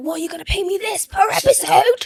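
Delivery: high, excited, screaming shriek. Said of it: "we were so excited, we were screaming".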